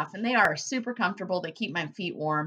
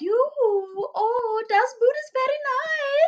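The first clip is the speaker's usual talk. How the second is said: bad put-on Russian accent, very high, loud; 5 dB louder than usual. Telling a story and quoting a Russian lady's remark: horrible Russian accent. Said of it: "That's a horrible Russian accent".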